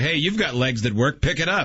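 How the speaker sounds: put-on sassy tone. Suggesting what another speaker should have said to staring people: imitating a sassy retort. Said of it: "a good opportunity to sass and say".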